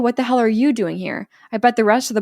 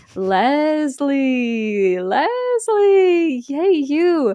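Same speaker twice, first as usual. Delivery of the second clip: eerie, high, spooky put-on ghostly calling voice; 5 semitones higher than usual. Telling the story of Kenny's joke on Leslie, doing Kenny's put-on ghosty voice. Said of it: "He's like putting on a ghosty voice".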